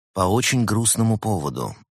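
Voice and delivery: ordinary delivery, nothing marked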